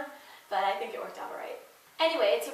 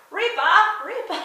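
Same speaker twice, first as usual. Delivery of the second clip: very loud, high, put-on British accent; 9 semitones higher, 8 dB louder than usual. Speaker recalling a line someone used to do, imitating Sean's British accent. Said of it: "would do in this British accent".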